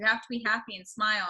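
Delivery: ordinary delivery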